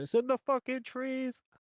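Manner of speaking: shrill, very high yell. A player speaks a character's line during the game, shouting. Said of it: "Charlie shouting".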